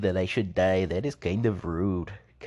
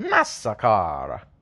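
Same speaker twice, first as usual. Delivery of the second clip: put-on Italian accent, man's voice; 4 dB louder than usual. Joking with friends, saying it how an Italian man would, Italian accent. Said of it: "It's like how an Italian man would say it".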